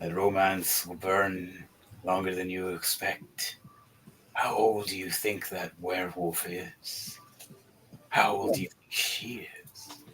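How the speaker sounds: dragon voice speaking through laughter. Playing the green dragon, answering with a laugh: laughing dragon voice. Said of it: "The green dragon laughs, going".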